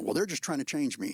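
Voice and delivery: ordinary talk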